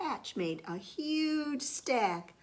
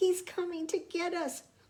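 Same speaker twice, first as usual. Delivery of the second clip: tiny, squeaky mouse voice, very high; 10 semitones higher than usual. Reading a children's story aloud, voicing the mouse with a squeaky voice. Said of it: "squeaked the mouse".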